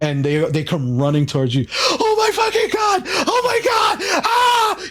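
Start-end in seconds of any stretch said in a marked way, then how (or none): 1.7-4.9 very high, drawn-out, panicked screaming. Voicing Kevin running out of a room screaming: panicked screaming. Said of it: "Kevin is freaking out".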